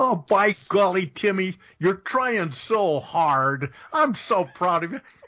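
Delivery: high, condescending, patronizing tone. Teasing the other speaker for sounding like patting a kid's head, mock-patronizing. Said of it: "you sound like you're patting a little kid on the head".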